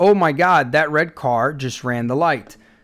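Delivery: ordinary delivery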